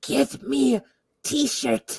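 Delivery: whispered, slow, drawn-out, breathy lizard voice. Quoting what the lizard says: imitating the lizard. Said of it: "The lizard's like".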